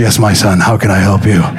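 put-on antique Old English manner. Retelling answering a child calling for him: Old English voice. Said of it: "I went Old English".

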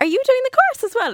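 put-on real West Cork accent, very high and loud. Recalling a woman who walked up to her on a course, imitating a West Cork accent. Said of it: "In a real Cork accent".

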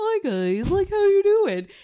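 dog's ordinary everyday voice, high and loud. Voicing what the dog sounds like normally: voicing the dog's regular voice. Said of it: "if his regular voice is".

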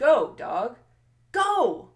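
exclaimed, last "go" punched out.

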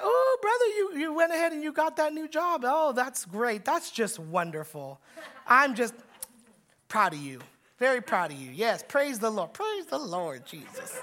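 put-on, overdone sing-song churchy voice. Acting out someone greeting a churchgoer, mock churchy flattery. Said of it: "churchy way of doing it".

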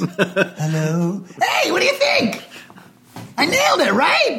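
put-on voice, very high, with big swooping pitch swings. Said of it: "That's my [name] voice".

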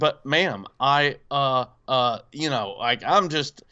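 usual speaking voice

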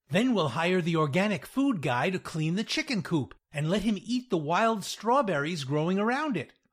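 ordinary talk

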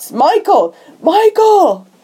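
high, eager, excited put-on shout. Retelling a chase where he spots a shadow in an alley, retold shout. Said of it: "and he shouts".

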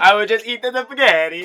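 fake Italian accent. Improvising a comic character who eats spaghetti, in a mock Italian accent. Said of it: "That's my best Italian".

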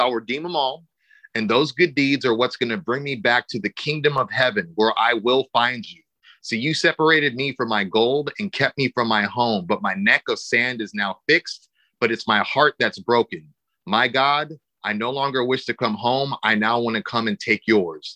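normal talking voice

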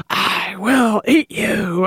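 very slow, drawn-out, close half-whisper. Describing a dog shirt that speaks into the dog's ear: mock half-whisper. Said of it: "it whispers in his ear".

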